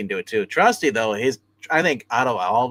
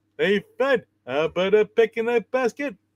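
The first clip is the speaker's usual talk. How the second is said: goofy cartoon voice, much higher pitch; 11 semitones higher than usual. Doing a voice the other speaker just remarked on: Barney Rubble voice. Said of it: "Now you sound like Barney Rubble Bear".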